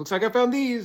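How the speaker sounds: very high-pitched, shrill, piercing scream. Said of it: "when I screamed".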